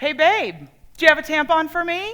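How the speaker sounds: projected, loudest possible, high-pitched call. Retelling what she says near the front of the bathroom line: loudest voice possible. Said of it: "in the loudest voice possible".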